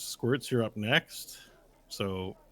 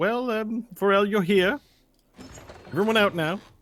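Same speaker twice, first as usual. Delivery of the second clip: very high, loud, bright, cheerful voice; 11 semitones higher, 6 dB louder than usual. Game narrator voicing the escort as the carriage door opens, cheery escort voice. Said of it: "you hear the cheery voice of the escort go".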